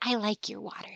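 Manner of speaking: close, soft, confiding half-whisper. Game master voicing a character who hugs the player and half-whispers in their ear, half-whispering. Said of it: "she just she whispers in your ear".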